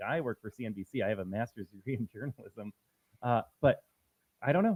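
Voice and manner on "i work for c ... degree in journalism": low, soft, superior, condescending tone. Retelling what a journalist behind them said, mimicking a condescending tone. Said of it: "looking down on me, condescending tone".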